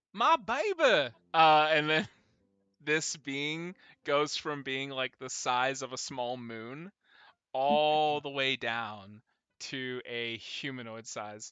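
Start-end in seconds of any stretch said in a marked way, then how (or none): 0.2-1.1 very high, loud, real down-home Southern country voice. Narrator voicing an enormous being calling to Ixris, in a country southern down-home voice. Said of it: "real country, southern, down home voice".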